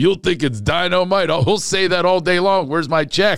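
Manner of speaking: TV commercial voice. Retelling an old insurance commercial: imitating J J in a commercial. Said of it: "and he goes".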